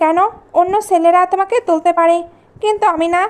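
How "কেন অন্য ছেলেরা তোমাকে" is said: usual speaking voice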